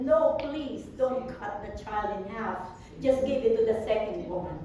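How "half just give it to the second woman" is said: ordinary talk, nothing marked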